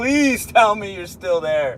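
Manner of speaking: high, panicky, anxious, freaked-out pleading voice. Losing connection while streaming and asking viewers to reply: freaking out. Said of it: "I'm freaking out right now".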